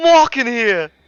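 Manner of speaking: very loud, high-pitched put-on Brooklyn accent. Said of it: "like a Brooklyn accent".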